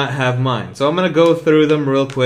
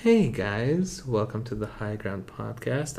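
very quiet, hushed ASMR whisper; 3 semitones lower, 11 dB quieter than usual. Opening the podcast intro, bringing back the ASMR intro: ASMR-style intro voice. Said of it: "bring back the A S M R intro".

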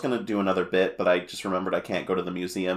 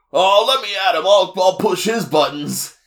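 put-on loud, high-pitched boy voice. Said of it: "the gas boy says".

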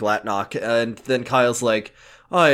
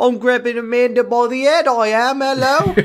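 put-on British accent voice, much higher and louder; 11 semitones higher, 3 dB louder than usual. Retelling a scene, the speaker voices Cassidy grabbing Amanda: Cassidy's British accent. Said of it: "fucking Cassidy British".

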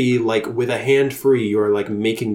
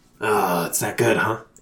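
fantasy monster voice of a small kobold; 2 semitones lower than usual. In a tabletop game, a player voices a distracted kobold hearing a sales pitch: kobold voice. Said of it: "I'm kind of doing a kobold voice".

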